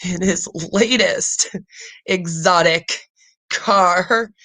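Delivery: very slow, fighting back laughter. Reading a news item aloud and trying to keep a straight face: holding back a laugh. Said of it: "I'm trying not to laugh at the same time".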